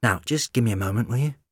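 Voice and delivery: ordinary delivery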